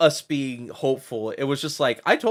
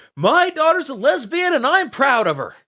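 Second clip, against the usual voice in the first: play-acted shrill, very high, loud scream; 12 semitones higher, 5 dB louder than usual. Retelling how he yelled outside an apartment complex: imitating his own scream. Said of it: "I screamed as loud as I could".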